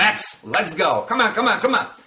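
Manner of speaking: high, sharp, barking delivery. Demonstrating how to command a dog named max, barking command pitch. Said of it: "Barking pitch you command".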